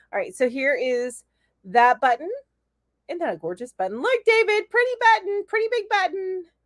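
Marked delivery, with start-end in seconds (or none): 4.1-6.5 high-pitched, silly, goofy put-on funny voice. Showing a button on camera and calling to David, in a funny voice. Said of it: "I said that in a funny voice".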